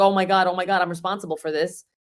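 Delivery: acted-out panicked, freaked-out voice. The speaker recalls alarms going off during their first real emergency, retelling own panic. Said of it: "I was freaking out".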